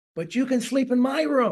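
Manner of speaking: sudden, all-out shout at the top of the voice. Retelling a boy's line in a nativity play: imitating David yelling at top of voice. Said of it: "he yells at the top of his voice".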